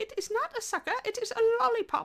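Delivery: put-on very high little British boy's accent. Retelling a convention encounter with a little boy, in his tiny little British accent. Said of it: "in his tiny little British accent".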